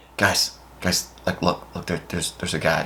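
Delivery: soft whisper with halting, tripping words. Retelling how one of the kids spotted him: imitating someone whispering. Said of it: "he kinda starts whispering".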